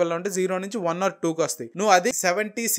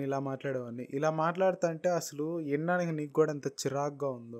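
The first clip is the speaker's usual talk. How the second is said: mock barely audible voice, lower and quieter; 4 semitones lower, 9 dB quieter than usual. Showing how one used to talk in the past: imitating own old quiet voice. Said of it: "ఈ voice రేంజ్లో నేను మాట్లాడేవాడిని".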